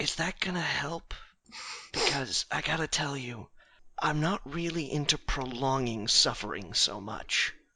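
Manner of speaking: quietest possible half-whisper, faint and barely audible. Half-whispering in character to a chained prisoner: half-whispering as quietly as possible. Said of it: "whisper to him as quietly as I possibly can".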